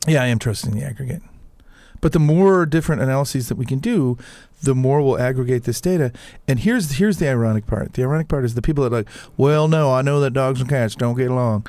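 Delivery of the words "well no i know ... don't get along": caricatured, put-on Southern US accent. Mocking people who doubt aggregated data, in a put-on southern accent. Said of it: "That was really insulting to everyone from the South".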